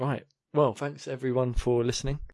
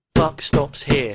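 overly dramatic, theatrical delivery, louder; 8 dB louder than usual. Responding to a point about stamping out a practice: theatrical delivery. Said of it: "unnecessarily theatrical".

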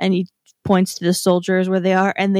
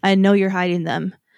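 put-on serious manner and tone. Retelling a film scene, quoting the hunter: imitating a serious manner. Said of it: "his mannerisms basically completely change to serious".

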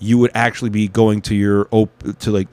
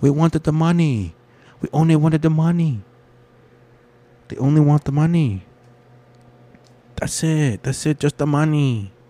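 put-on Chinese accent, pitched up; 6 semitones higher than usual. Mid-rant, the speaker suddenly slips into a fake Chinese accent. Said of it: "I don't know why I did that Chinese accent".

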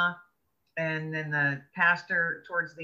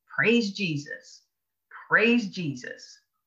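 mock booming, loud, deliberate, drawn-out proclaiming tone; 3 semitones higher, 4 dB louder than usual. Retelling what a smiling gentleman said: imitating a loud exclamation. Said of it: "he just said really loudly".

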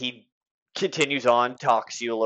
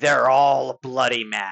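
put-on creepy old pirate voice; 4 dB louder than usual. Answering a question about the mad ones, a character speaks in a creepy old pirate voice. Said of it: "creepy old pirate".

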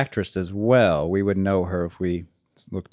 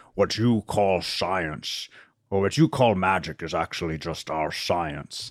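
put-on Scottish accent in a film-star voice; 4 dB quieter than usual. Quoting a line that Thor says in conversation, deliver it sounding like Sean Connery. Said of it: "You sound like Sean Connery".

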